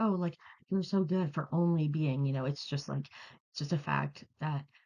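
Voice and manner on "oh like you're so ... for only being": plain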